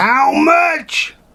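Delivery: very high-pitched, booming, loud outburst. Speaker recalling their mum speaking up in a music room, mimicking mum's booming voice. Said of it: "a bloody booming voice".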